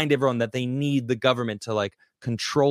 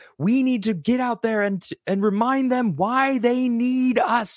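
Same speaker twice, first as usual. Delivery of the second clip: play-acted shrill commanding yell, very high pitched; 10 semitones higher than usual. Retelling how a man yelled at his subordinates, imitating a man yelling. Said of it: "And he's like yelling at them".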